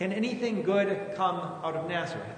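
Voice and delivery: ordinary talk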